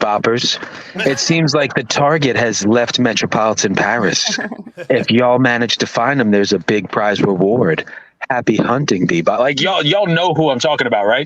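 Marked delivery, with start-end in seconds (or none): 0.0-9.4 low, sultry female radio announcer voice. Reading out a bounty notice as the radio woman, in a sultry female radio voice. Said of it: "just has like the most like sultry radio voice ever".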